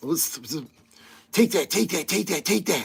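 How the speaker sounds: soft voice with a heavy lisp. Trying impressions and adding more lisp: Tyson-ish voice with heavy lisp. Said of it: "If I did a little bit more of a lisp".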